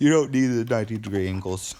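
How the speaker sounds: loud talking through a yawn. Explaining a repair while recording late at night, yawning while talking. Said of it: "Sorry, I'm yawning".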